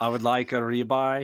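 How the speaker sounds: mock, put-on European accent. Imagining him walking into a Texas place, speaking in a put-on European accent. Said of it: "with that accent".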